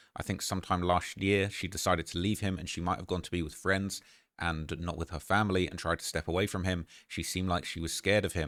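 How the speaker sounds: usual speaking voice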